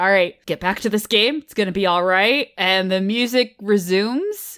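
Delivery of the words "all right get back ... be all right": mock-reassuring tone, much lower pitch. Recapping a scene where Hammond pulls Smith aside, imitating Hammond reassuring. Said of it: "he's like".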